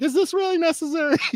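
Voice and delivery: exaggerated very high pitch. Demonstrating how some people's voice goes up, exaggerated higher pitch. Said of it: "tend to have a slightly higher voice pitch. So their voice goes up a little bit. I mean, I'm uh, exaggerating it".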